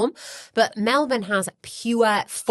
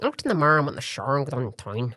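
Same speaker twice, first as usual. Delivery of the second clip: clumsy, poor put-on Irish brogue; 4 semitones lower than usual. Showing off accents while admitting he's terrible at irish: put-on irish accent. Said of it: "That's my Irish".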